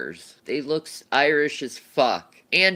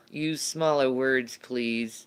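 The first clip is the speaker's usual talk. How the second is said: usual speaking voice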